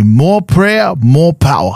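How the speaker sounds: put-on slow Fijian accent, said like a mantra. Quote the saying a man repeated at every little prayer time, imitating his Fijian accent. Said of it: "He'd say in his Fijian accent".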